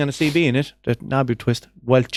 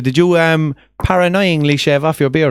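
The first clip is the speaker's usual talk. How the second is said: normal talking voice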